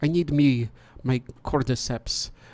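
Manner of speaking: slow, put-on German accent. Trying the line with a German accent. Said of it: "I need to do that in a German accent".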